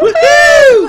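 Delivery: very high, loud, mocking squealed woohoo. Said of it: "Always making fun of my".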